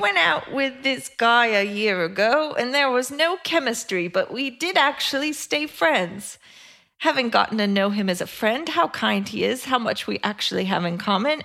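put-on best British accent. Asked to read this aloud in her best British accent. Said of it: "please read this in your best British accent".

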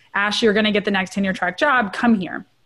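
ordinary talk, nothing marked

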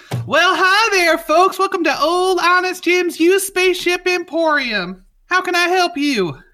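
very high, super happy, beaming, cheery delivery. Voicing a super happy cartoon face on a shop screen greeting customers: super happy Old Honest Jim voice. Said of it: "a super happy, like, cartoon face with a, like, straw hat pops up, and he goes".

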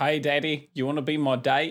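put-on New Zealand-sounding accent. Imagining the plot's daughter still alive, voicing her in a New Zealand-sounding put-on accent. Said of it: "That sounds more New Zealand".

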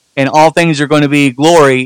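normal talking voice

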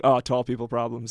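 ordinary talk

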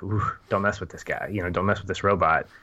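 normal talking voice

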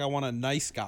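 plain

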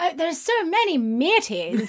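put-on posh voice. Imitating how the other speaker said matey: imitating a posh voice. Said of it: "you sounded quite posh".

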